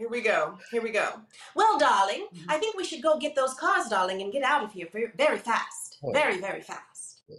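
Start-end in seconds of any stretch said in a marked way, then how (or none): 1.5-7.2 put-on old-time 1940s character voice. Asked on the spot for a 1940s character, improvising in a 1940s character voice. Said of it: "you give me a 1940s flipping box cars character".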